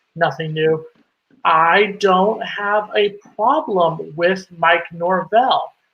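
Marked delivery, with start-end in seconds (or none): 1.4-5.6 spelled out very slowly, word by word, deliberate. Saying people don't listen, then stating a point slowly for them. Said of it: "So I'll say it slowly for you".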